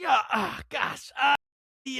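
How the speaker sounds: put-on fumbling for words. Retelling a father asking a counter for something he can't name: imitating dad groping for a word. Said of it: "he always had this problem".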